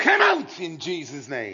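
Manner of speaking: mock forceful, loud, swooping screamed delivery. Recounting how they screamed one more time at church: retelling a scream. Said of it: "So then I scream one more time".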